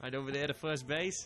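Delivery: teasing, mocking put-on Boston accent. Baseball commentator calling a batter's walk to first base, in a mock Boston accent. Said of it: "mocking me with my Boston accent there".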